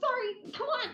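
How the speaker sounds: very high, giddy, eager, excited voice. Playing a distracted character rushing off: excited in character. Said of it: "she's just really excited".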